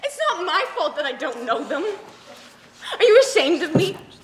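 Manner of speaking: loud, tearful speech through sobs. Person brought to meet the other's friends argues with them, crying while talking. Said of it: "Can you stop crying?".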